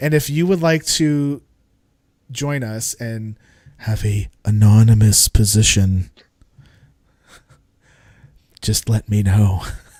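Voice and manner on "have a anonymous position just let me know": very loud, deep, sinister, creepy put-on voice. Host finishing a list of names, inviting listeners to join, creepy voice. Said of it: "What voice is that? That's like creepy voice".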